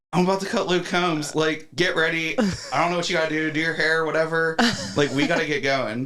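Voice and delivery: put-on very excited, freaked-out, high little-girl voice. Retelling a phone call to a wife: imitating own freaked-out voice. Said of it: "I probably sounded like a little girl".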